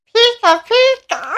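tiny, very high, squeaky creature-like cry. Asked by another speaker to do their best Pikachu, the speaker obliges: Pikachu voice. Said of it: "do your best Pikachu".

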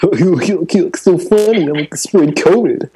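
very high-pitched cocky player-guy voice. Speaker imagines a guy spreading COVID on purpose: fuckboy impression. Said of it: "That was my fuckboy impression".

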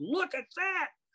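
put-on very high, sudden reflexive yell. Retelling jumping up at a restaurant table, pointing: retelling a yell. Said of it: "pointed and yelled".

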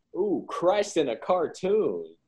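high, slow, drawn-out Southern accent.

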